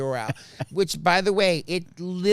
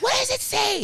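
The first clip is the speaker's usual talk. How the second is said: mock shrill, very high-pitched yelling. Retelling how a woman yelled to the person typing behind the desk, imitating someone yelling. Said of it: "And she's yelling".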